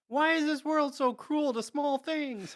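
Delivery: play-acted very high, tearful sobbing voice. Describing a scene where a character collapses sobbing, mock-sobbing in a higher voice. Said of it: "I really like your impression of this".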